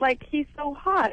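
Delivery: ordinary talk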